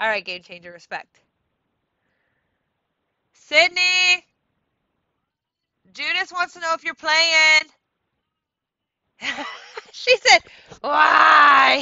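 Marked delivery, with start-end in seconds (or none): 10.8-11.8 high, loud mock shout. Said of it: "Just like that".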